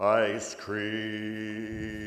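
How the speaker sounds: talking slowly. Showing a man how to say the words, with slow speech. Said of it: "Talk slow".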